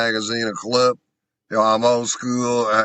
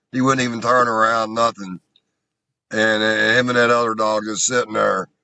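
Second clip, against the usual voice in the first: ordinary talk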